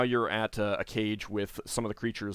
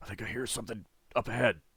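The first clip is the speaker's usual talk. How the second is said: hushed whisper. Voicing a gif who turns back to the party: whispering. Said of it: "one of them turns back and whispers".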